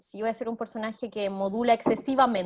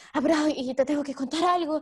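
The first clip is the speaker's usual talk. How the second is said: hurried, rushed, breathless and winded; 5 semitones higher than usual. Explaining breath control, the speaker demonstrates a character arriving; hurried, out of breath. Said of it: "si mi personaje viene así".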